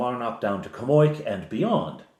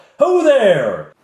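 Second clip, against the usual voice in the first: very high, very loud shout; 11 semitones higher, 9 dB louder than usual. Voicing a character hailing a group from a distance: calling out loudly. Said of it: "stands up and calls out".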